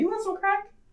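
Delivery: soft, very high, casual, unbothered nonchalant tone. Retelling a stranger's offer on the street: imitating a calm, nonchalant offer. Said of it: "so calmly and nonchalantly just asked me".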